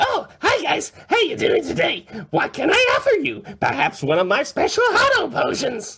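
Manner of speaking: very high, chirpy, sing-song, annoying goblin voice. Voicing a recurring vendor character for the players, in an upbeat, high-pitched, irritating voice. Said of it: "really upbeat, high-pitched, irritating voice".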